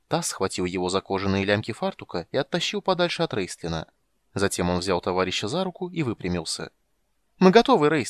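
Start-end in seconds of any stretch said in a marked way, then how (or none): 7.4-8.1 very high, very loud, happy joyful cry. Holding his comrade's hand, he calls out, exclaiming joyfully. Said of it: "радостно воскликнул он".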